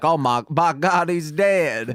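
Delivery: slow, drawling wrestling commentator voice. Describing commentators crying oh my God, done in J.R. commentator voice. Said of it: "it's always in the J R voice of like".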